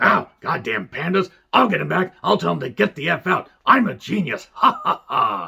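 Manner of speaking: wrestling boss character voice with cackle. Doing an impression while joking about the Pandas: Vince McMahon impression. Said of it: "my Vince McMahon impression".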